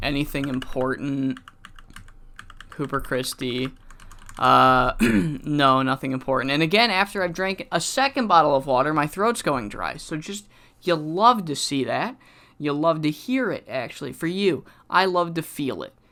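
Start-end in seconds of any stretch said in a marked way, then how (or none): 10.8-15.9 pointedly sarcastic, mock-pleased delivery. Waiting for something to load with a dry throat, being sarcastic. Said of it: "I am being sarcastic".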